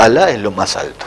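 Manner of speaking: ordinary talk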